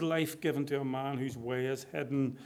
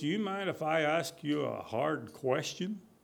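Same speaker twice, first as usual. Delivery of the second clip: slow, drawn-out, put-on approximate American accent. Retelling a film scene, quoting an actor: imitating an American accent. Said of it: "That was sort of an American accent".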